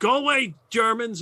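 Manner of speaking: halting, broken English. A woman in an open hut confronts newcomers, in broken English. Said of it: "in broken English".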